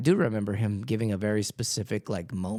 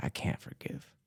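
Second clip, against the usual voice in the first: hushed, crying, tearful whisper. Retelling what a guy said when offered prayer: imitating someone crying. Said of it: "And he was crying".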